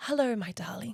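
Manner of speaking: put-on old English man voice, soft. Retelling a phone call with Dusty, a local snake catcher, in his old English man voice. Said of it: "it's almost like he's an old English man".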